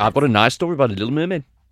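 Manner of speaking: attempted Danish accent. Redoing a line cut from a sketch, performer insists on an attempted Danish accent. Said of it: "That sounded quite Brummy".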